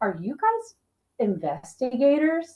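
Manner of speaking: put-on soft, anxious, worried, concerned, swooping tone. Retelling what the app asked during an investigation: worried Spirit Talker app voice. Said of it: "it said with worry and concern".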